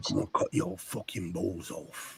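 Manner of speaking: breathy, hushed, quiet tough-guy menace. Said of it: "it sounded like Jason Statham".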